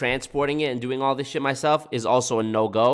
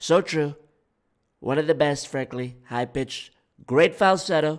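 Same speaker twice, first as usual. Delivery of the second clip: raspy put-on voice; 3 semitones higher than usual. Reading chat comments aloud, then trying out a Trump impression. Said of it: "this raspiness could help my Trump impression".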